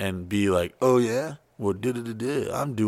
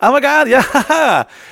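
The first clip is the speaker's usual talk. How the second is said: fake cheerful gush, very high, loud, drawn out; 11 dB louder than usual. Retelling how a co-host answered with a fake smile: imitating a fake-cheerful reply. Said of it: "do that fake smile, like".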